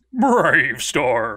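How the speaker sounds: put-on very loud, over-the-top horse voice, heavy cowboy accent. Describing a cartoon's horse character to players: imitating over-the-top horse character. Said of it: "So he's just like".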